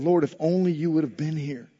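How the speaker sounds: put-on regretful disappointment. Acting out a woman's words to the lord: mock-disappointed and regretful. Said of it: "There's disappointment".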